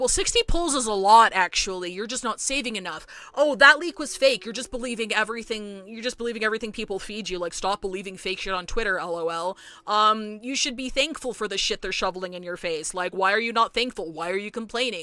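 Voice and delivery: ordinary talk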